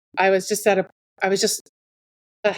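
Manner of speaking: stuttering, stumbling and tripping over words. Someone telling listeners how they got into heathenry, stuttering. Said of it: "I'm stuttering".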